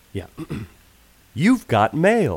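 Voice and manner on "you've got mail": recorded-sounding computer announcer voice. Speaker shows the others his impression of the AOL You've Got Mail guy. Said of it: "I do a good impression of the AOL You Got Mail".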